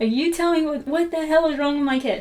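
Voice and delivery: play-acted demanding half-yell. Retelling a dream of yelling at a cat: retelling yelling at a cat. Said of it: "profusely yelling at this cat".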